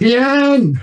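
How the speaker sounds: very high, stretched, drawn-out yell. Calling out over a mosh pit so tien can hear: yelling a name. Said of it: "I'm gonna yell at him".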